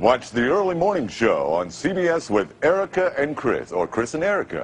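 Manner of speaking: smooth, golden radio announcer voice, rolled-out promo read. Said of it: "Give it a shot. Go ahead".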